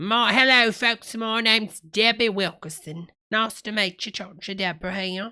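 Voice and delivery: put-on faint English accent. Imitating a video host greeting viewers, in a slightly English-sounding host voice. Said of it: "sometimes it sounds like he's talking a little bit English".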